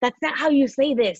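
high, loud, slow yell. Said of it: "yelling at each other".

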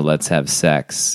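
low, slow monotone.

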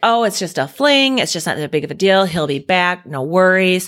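ordinary talk, nothing marked

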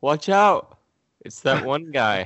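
slow, high-pitched, drawn-out delivery. Retelling what another speaker just did, the Scott Pilgrim line delivery. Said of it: "the Scott Pilgrim thing".

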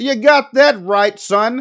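high, drawn-out heckling call. Acting out a guy behind the bar heckling the stage: imitating a bartender yelling up. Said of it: "some guy behind the bar yelling up".

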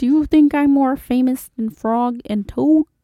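cartoon frog puppet character voice. Asking about fame in role: Kermit the Frog voice. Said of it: "I do think you're more famous".

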